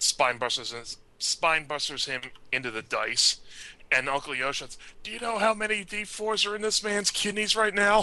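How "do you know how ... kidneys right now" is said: pitched-up wrestling announcer play-by-play commentary. Retelling a wrestling match: imitating Uncle Yoshi announcing. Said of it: "Hearing Uncle Yo announce it".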